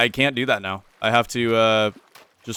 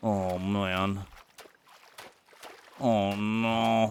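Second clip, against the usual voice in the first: fake French accent, quieter; 9 dB quieter than usual. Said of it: "You guys like my French impression?".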